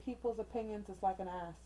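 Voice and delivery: ordinary talk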